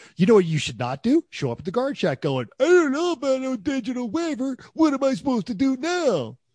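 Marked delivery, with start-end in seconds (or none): 2.6-6.3 very high-pitched, goofy cartoon squirrel voice. Acting out someone arriving unprepared at the guard shack, in a Rocky the squirrel voice. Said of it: "He sounded like Rocky from Rocky and Bullwinkle".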